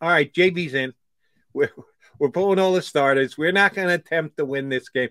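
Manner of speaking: ordinary talk, nothing marked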